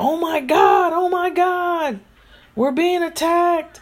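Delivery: very high, shrill screaming cry. Retelling a dream of a building on fire, imitating own screaming. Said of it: "I started screaming".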